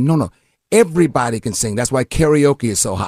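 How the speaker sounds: normal talking voice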